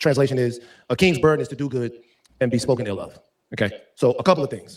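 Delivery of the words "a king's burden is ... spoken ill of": ordinary talk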